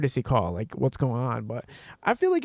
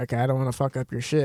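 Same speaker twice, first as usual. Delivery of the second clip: ordinary delivery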